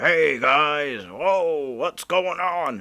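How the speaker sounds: put-on loud, happy, friendly, deep male voice. Retelling how a big guy greets the police: imitating a loud, happy, deep-voiced guy. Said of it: "He's just a loud, happy guy".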